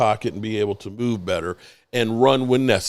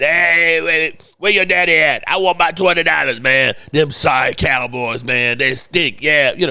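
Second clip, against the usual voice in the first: raspy, loud, high-pitched, gloating voice; 6 semitones higher, 6 dB louder than usual. Retelling how his dad's cigar-smoking friends phoned after a Redskins win, raspy voice. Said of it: "they'd call up with that raspy voice".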